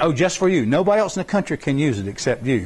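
ordinary delivery

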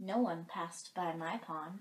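ordinary delivery

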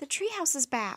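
ordinary delivery, nothing marked

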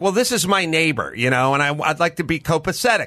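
ordinary delivery

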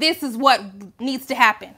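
ordinary talk

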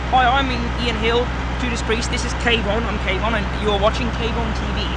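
ordinary talk

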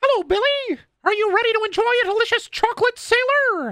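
very high, cartoonish pitch. Unable to do Mickey Mouse, speaker does another cartoon voice instead: Chocolate Sailor voice. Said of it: "the chocolate sailor voice from Billy and Mandy".

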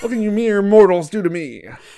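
loud, high, cartoony put-on voice. Acting out that one kid from school, in a cartoon character voice. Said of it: "You sound like a cartoon character".

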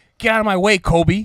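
woman's loud, high-pitched yell. Retelling a movie scene where a woman blocks the hero: imitating a woman yelling. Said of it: "And she's yelling".

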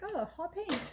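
high, delighted, surprised tone. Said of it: "So I was like".

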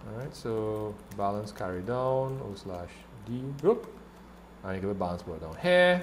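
soft, low mumble under the breath. Speaker working through balance arithmetic aloud, mumbling. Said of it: "Sorry for mumbling, I now realize I'm kind of mumbling".

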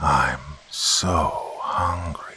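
low, guttural, half-whispered growl. Narrator voicing her as she kneels and half-whispers into his ear, low guttural growl. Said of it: "her voice a low, guttural growl".

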